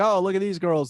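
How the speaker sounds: dim-witted dude voice. Imagining what a guy at the gym thinks: imitating a dumb guy. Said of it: "a dumb guy who's like".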